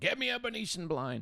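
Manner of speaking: play-acted very high shout with Romanian accent. Telling a story about making a movie, act out Sam Spiegel's order, retelling a yell. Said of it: "Probably in his Romanian accent".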